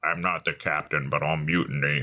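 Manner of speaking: very low, flat, emotionless robot monotone. Speaker describing an eight-foot robot man: imitating an emotionless robot man. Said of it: "this emotionless robot man".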